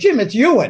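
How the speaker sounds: usual speaking voice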